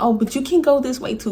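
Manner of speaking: play-acted scared, nervous, high, trying to sound offhand. Retelling giving directions to a driver who took a different turn, retelling her nervous self. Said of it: "And I'm nervous".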